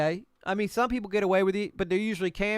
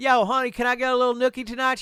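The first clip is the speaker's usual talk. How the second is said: mocking put-on character voice; 4 semitones higher than usual. Mocking a man said to be locked in a basement: imitating Ian. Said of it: "he's like".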